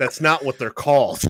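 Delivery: put-on sudden, dead-serious, in-your-face angry tone. Retelling how someone got angry over what the cards are called, imitating an angry retort. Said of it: "went from all happy to really angry".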